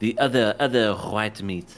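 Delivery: French-sounding voice. Trying to quote Austin Powers' Fat Bastard: French accent. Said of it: "why is it French now?".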